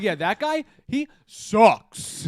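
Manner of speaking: mock very slow, confident, dismissive chest-voice delivery. Retelling how another speaker said a line: imitating saying it with chest. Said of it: "You said it with your chest".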